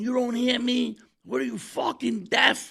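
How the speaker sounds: very high, stretched-out, drawn-out shrieking scream. Retelling how a stranger ran up and yelled at them: imitating a man screaming. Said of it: "He's screaming at us".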